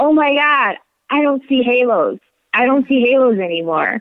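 loud, high yell full of amazement. Recalling riding while the husband drove, the speaker retells a yell. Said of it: "I just yelled out loud".

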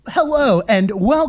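hammy, over-eager, mic-ready podcast host voice. Recalling how a co-host opened the podcast, imitating [name]'s podcast voice. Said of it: "You did your [name] voice that you always do".

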